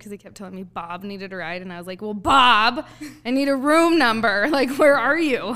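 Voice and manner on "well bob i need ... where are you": very loud, deliberate, drawn-out demanding shout. Retelling a caller asking for a ride without a room number: retelling her own yell. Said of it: "I yelled at him".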